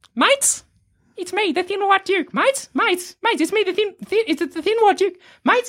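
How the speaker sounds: whiny high voice. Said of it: "this voice that responds is even whinier".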